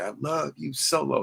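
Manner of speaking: acted, very high, very slow, drawn-out holler. Acting out the line one wrestler wanted another to say: imitating a yell. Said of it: "just yell it like that".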